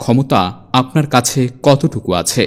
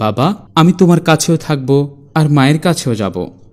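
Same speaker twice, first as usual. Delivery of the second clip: ordinary delivery, nothing marked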